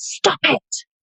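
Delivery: very high-pitched, sudden, startled shout. Retelling how a friend woke up at night: imitating a friend shouting. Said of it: "she wakes me up and she shouts".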